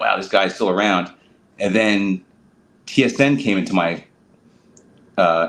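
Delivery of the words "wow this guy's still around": ordinary delivery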